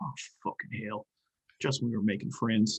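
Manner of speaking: barely audible, very quiet mumble under his breath. Voicing a character who hears bad news: mumbled under his breath. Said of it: "mumble under his breath".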